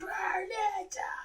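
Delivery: mock wrestler shout, high, slow, drawn-out wailing.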